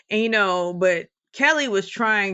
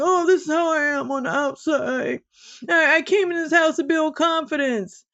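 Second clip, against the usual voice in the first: mock tearful, high, weepy, sobbing voice; 7 semitones higher than usual. Retelling what a houseguest keeps saying: imitating someone crying. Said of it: "crying like".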